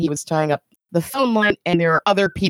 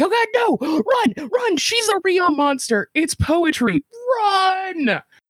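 mock very high scream, Run stretched long; 12 semitones higher than usual. Retelling own reaction while watching an uncomfortable scene: imitating own screaming. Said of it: "this is the point where I'm screaming".

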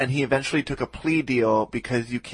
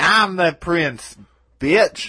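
mock drag queen style, higher, louder; 5 semitones higher, 7 dB louder than usual. Retelling what a murderer said to an employee: imitating a drag queen voice. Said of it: "He said that very much like a drag queen".

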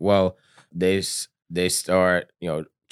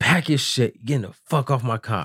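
furious, angry, pitched-up commander's voice; 6 semitones higher than usual. Retelling how the company commander reacted to the article: imitating angry commander. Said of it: "our company commander is pissed".

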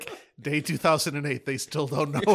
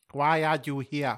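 acted speech as if tongue is numb; 2 semitones lower, 3 dB quieter than usual. Asking a creature in a game scene why it is here: acted numb-tongue speech. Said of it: "you're really unclear".

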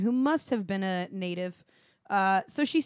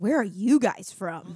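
put-on furious, very upset tone; 3 dB louder than usual. Retelling an older local woman asking where they're from, imitating an angry, upset woman. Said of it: "in the angriest, most upset tone".

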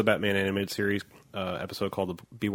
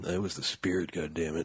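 mock grave voice, quieter; 3 semitones lower, 5 dB quieter than usual. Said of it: "my gravitas voice".

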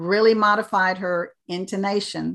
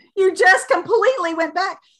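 high-pitched, startled, surprised exclaiming. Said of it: "And I kept saying".

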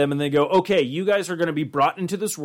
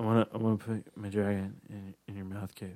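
mock-drunk voice, much lower and quieter; 7 semitones lower, 11 dB quieter than usual. Retelling a drunk phone call to someone from the LARP group, imitating a drunk caller. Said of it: "and drunk as fuck".

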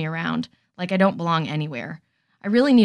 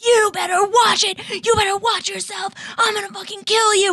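put-on screaming, pitched very high. Retelling a schoolyard fight, imitating own screaming at the boy. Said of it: "I was screaming".

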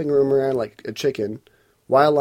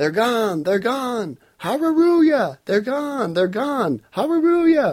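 very high, repeated, acted-out shouts; 10 semitones higher than usual. Speaker retells a man shouting after being prayed for, imitating someone shouting. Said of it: "he starts shouting".

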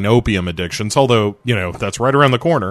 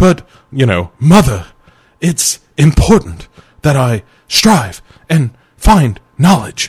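knowingly bad, raised, loud put-on actor voice; 4 semitones higher, 5 dB louder than usual. Retelling a film scene, voicing the son answering his mother: shitty William Shatner impression. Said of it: "I'm doing a shitty".

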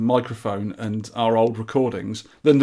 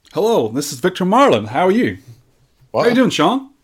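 put-on American accent with swooping pitch; 7 semitones higher, 4 dB louder than usual. Co-host greets the podcast host at the show's start: American accent. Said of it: "you've picked up the accent".

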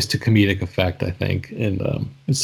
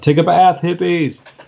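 acted, shrill, high, loud heckling yell; 10 semitones higher, 6 dB louder than usual. Speaker retelling what a man yelled out at people, retelling a yell. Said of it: "he just yelled out".

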